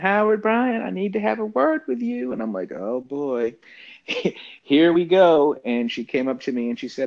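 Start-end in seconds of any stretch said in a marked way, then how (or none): 0.0-2.3 put-on very high, sweet, buttery Southern accent. Quoting Hank Aaron's wife calling him over, in a sweet, soft Southern accent. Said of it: "sweet, soft, buttery Southern accent".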